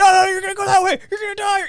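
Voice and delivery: mock screaming, very high and shrieked. Retelling what the roommate screams into his mic during his live stream, imitating a screaming roommate. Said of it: "He's screaming in his mic".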